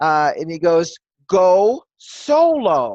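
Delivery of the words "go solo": thunderous, booming male spirit voice. Speaker recalls praying and the spirit voice answering, booming thunder voice. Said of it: "I always have this male thunder voice".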